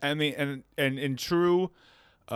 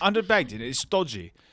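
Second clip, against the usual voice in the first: clumsy, bad put-on British English accent. Friends trade put-on British phrases, one doing a bad English accent. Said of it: "I have the worst English accent".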